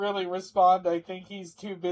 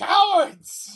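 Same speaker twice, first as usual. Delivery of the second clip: shrill, very high, loud shout; 13 semitones higher, 6 dB louder than usual. Voicing a thug who sees allies flee, shouting in character. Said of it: "shouts like".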